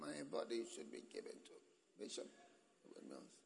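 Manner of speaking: soft, quavering, trembling, shaky voice. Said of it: "But his voice was trembling".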